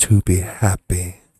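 loud, breathy, full and airy pop-star voice. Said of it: "it was breathy, just like that".

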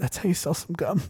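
hushed, very quiet voice, cracking a little. Retelling what he whispered to someone at the movie theater, in a slightly broken voice. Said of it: "like a little bit broken voice".

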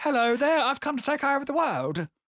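put-on English accent. Imitating an actress's English accent from a film: Salma Hayek's English accent. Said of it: "Salma Hayek's English accent".

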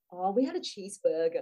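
put-on sheepish manner. Retelling how someone answered the speaker's question, imitating a sheepish reply. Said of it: "they very sheepishly goes".

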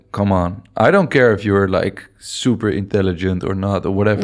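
normal talking voice

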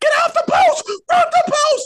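mock, frantic, possessed-sounding screaming, very high. Retelling how a guy screamed during the game: imitating someone screaming. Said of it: "is screaming at you".

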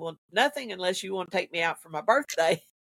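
ordinary talk

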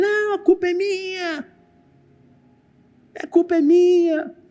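put-on very high, anguished, drawn-out, desperate crying wail. Retelling a woman screaming over her sister's coffin, imitating a desperate scream. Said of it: "Ela gritava desesperadamente".

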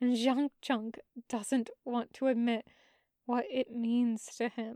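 ordinary delivery

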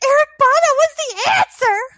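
very high-pitched, loud, thrilled outburst. Retelling what he said when he was so excited, retelling excited speech. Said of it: "He was so excited".

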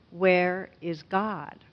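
put-on sterner, pointed, pressing tone. Retelling a pastor repeating his question to a silent boy, imitating a sterner tone. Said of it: "the pastor repeats the question even with a sterner tone".

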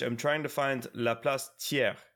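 ordinary delivery

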